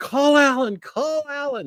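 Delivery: acted, very high, stretched-out scream. Retelling a brother's reaction to the apple: imitating brother screaming. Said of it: "he's screaming".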